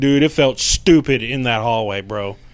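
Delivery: ordinary delivery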